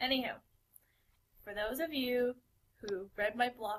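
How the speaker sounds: soft, condescending, talking-down patronizing voice. Told to use an indoors voice, the speaker starts again; patronizing voice. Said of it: "not your patronizing voice".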